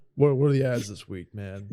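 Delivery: plain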